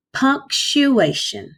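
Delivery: slow, syllable by syllable. Teaching a tough word to children, say it slower and broken down. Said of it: "I'm going to say that word a little bit slower and I'm going to break it down".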